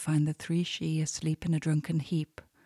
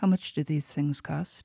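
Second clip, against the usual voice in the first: plain reading voice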